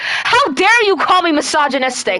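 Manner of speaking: indignant anger. Answering another speaker who called them misogynistic: angry, upset. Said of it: "I'm gonna get upset with you".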